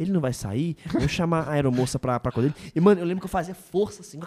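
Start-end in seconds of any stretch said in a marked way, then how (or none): 0.0-2.7 hushed murmur under the breath, half-whispered. Retelling what people around said while sleeping: imitating people half-whispering. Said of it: "as pessoas co-, cochichando".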